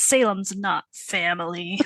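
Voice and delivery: very harsh, hard, severe, cutting tone. Retelling a character's cutting remark: imitating Zelda's harsh tone. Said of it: "Zelda gives a very harsh, like".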